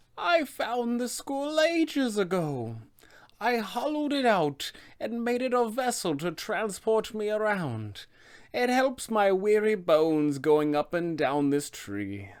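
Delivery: high, slow, drawn-out ancient villain voice. A game master voices the character's reply when players ask about the skull, Baba Lysaga voice.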